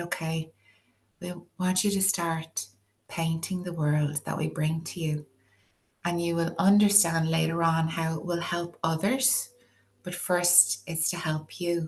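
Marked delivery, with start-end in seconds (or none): none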